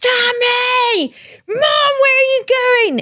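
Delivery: put-on very high, drawn-out toddler scream. Retelling a toddler's nursery tantrum: imitating a screaming toddler. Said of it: "Like, screaming".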